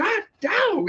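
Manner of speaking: put-on very high, sudden, frightened startled yell. Speaker retells her reaction when she walked in on him, imitating her yell. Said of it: "why are you yelling?".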